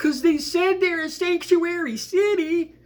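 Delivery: whiny, annoying, very high voice. Mimicking what a man said on a video, in a high, annoying, whiny voice. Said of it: "in this this high, annoying, whiny voice".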